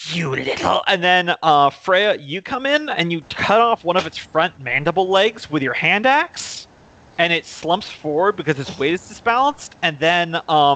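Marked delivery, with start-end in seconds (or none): 0.1-0.8 mocking, goading, taunting jeer. Voicing a character taunting a monster in a fight: taunting a monster. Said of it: "and he taunts it".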